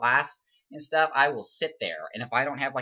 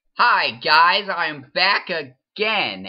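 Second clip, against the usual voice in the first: forced peppy voice, very loud, high, drawn out; 6 semitones higher, 9 dB louder than usual. Greeting viewers while actually exhausted, with fake high energy. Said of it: "talking like I have a ton of energy".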